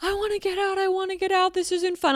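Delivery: put-on very high, tearful sobbing crying voice. Retelling what a sobbing woman said to the speaker, imitating someone sobbing. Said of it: "She just starts sobbing. And she's like".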